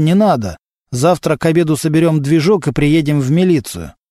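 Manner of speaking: ordinary delivery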